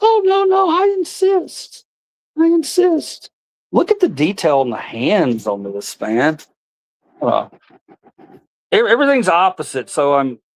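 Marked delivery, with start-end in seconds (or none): 0.0-3.3 squeaky, very high, slow, drawn-out puppet voice. Performing with puppets, speaking in a puppet voice. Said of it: "started talking in my puppet voices".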